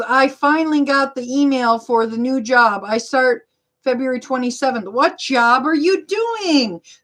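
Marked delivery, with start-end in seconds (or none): none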